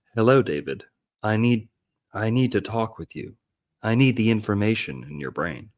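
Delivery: put-on otherworldly spaceship voice. Describing how the UFO first talks to the boy, imitating the UFO's voice. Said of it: "That's like how it talks to start off".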